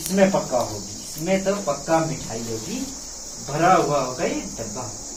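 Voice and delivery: low, soft, sneaky mutter.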